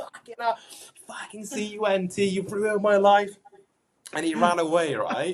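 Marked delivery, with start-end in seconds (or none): 0.0-3.3 mock, high, furious raging screams. Retelling confronting someone who got in the car: imitating own screaming. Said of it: "screaming at him".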